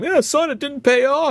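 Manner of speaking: acted mocking voice. Acting out the voice in one's head: mocking inner voice. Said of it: "the voice in my head saying".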